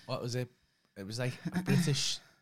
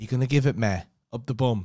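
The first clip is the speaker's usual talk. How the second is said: put-on Leeds accent, girl voice, loud; 7 dB louder than usual. Recounting a favourite bit, quoting a woman, imitating a Leeds accent. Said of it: "she had this like Leeds accent".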